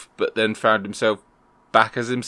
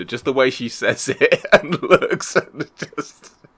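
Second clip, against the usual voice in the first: talking while laughing and giggling; 3 semitones higher than usual. Describing a favorite funny moment from a show: laughing while talking. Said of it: "it's like laughing now just thinking about it".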